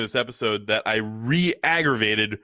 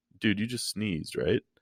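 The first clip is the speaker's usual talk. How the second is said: acted, very nonchalant, offhand, unbothered, casual; 3 semitones lower, 7 dB quieter than usual. Retelling what a poker friend said after a painful sneeze: imitating a nonchalant remark. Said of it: "very nonchalantly says".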